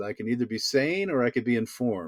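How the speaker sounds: ordinary talk, nothing marked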